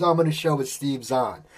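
ordinary delivery

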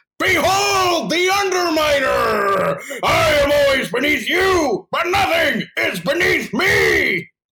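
very high, very slow, loud, drawn-out screamed voice. Performing a character's line for another speaker: screamed Underminer voice. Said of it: "it's hard to scream with his kind of".

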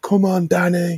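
very high-pitched, yelled, screamed urging tone. Retelling how MJF talked during a match: imitating someone screaming. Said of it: "he was literally screaming dialogue".

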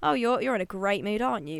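ordinary delivery

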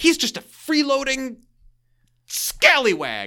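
fuming, steamed, very high-pitched voice. Retelling a scene where everyone is furious, imitating Al's steamed complaint. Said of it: "Al is just steamed".

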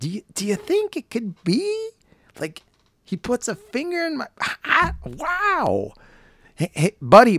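very high sing-song, swooping, long stretched "wow". Speaker with a nearly gone voice tries an Owen Wilson impression. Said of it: "I'm going to try to do Owen Wilson talking".

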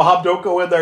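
high, earnest, pleading, begging voice. Retelling a movie scene where he begs mom not to go: imitating someone begging. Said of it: "begging her not to go".

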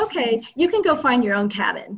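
ordinary talk

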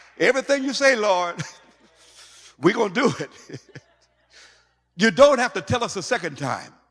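very high, loud, laughing, eager zeal. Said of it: "listen to the attitude now".

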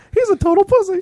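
very high, loud, cartoonish voice. In a bit, someone plays Mickey answering the question: Mickey Mouse voice. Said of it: "Someone be Mickey".

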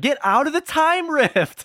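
high, drawn-out whine. Quoting a character's line: imitating whiny Turkatron. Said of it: "I love how whiny Turkatron is".

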